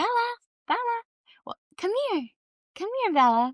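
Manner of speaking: very high, call-the-dog voice. Showing how forced talking sounds, in a talking-to-a-dog voice. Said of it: "like I'm talking to a dog".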